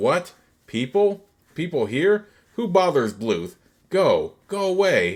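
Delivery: irritated, put-out, high and slow. Narrator voices Bluth disturbed by intruders at his farmhouse, annoyed Bluth voice. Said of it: "He is annoyed by the disruption".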